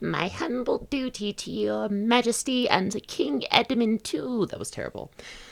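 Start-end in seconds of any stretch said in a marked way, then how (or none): 0.0-4.5 tiny, shrill, squeaky piping voice, slow. Reading a story aloud, voicing a whiskered character's greeting, shrill little piping voice. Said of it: "says in his shrill little pipping voice".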